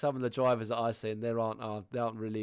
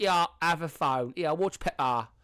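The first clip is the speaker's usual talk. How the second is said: bad Essex accent, higher and louder; 6 semitones higher, 5 dB louder than usual. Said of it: "the worst Essex accent I could have done".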